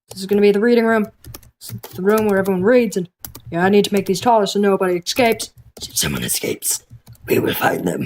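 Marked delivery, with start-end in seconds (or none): 5.8-8.0 creepy, threatening, menacing put-on scary voice. Building a reading room in a game beside another player; scary voice. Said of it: "Don't use that scary voice".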